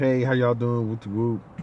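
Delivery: ordinary delivery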